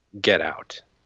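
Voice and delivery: put-on angry voice. Retelling a voice heard in the car park, imitating an angry voice. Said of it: "like it's angry with me".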